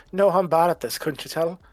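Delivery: light chuckle through words. A game master voices a character who has just been grabbed, chuckling. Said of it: "Maury just kind of chuckles and goes".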